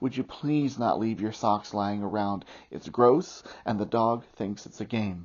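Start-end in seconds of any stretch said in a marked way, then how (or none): none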